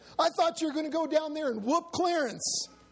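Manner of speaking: words cried out, very high-pitched. Rufus's wife cries out to him after he dives under the bed. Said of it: "cried his wife".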